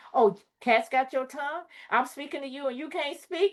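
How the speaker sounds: high-pitched, nagging, scolding parent voice. Retelling how parents scolded a crying child: imitating a scolding parent. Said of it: "then when you didn't say nothing".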